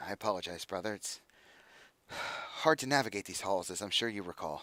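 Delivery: quiet, soft, secretive, hushed half-whisper. A woman leading a man through halls turns back to him, half-whispering. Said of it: "she kind of whispers".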